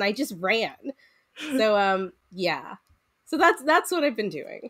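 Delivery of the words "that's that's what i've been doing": normal talking voice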